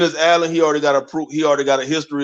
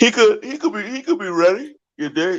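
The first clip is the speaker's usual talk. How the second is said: words pushed out mid-yawn, pitched up; 7 semitones higher than usual. Speaker talks about a player's readiness for the NFL on camera, yawning while talking. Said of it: "I'm yawning all in the camera".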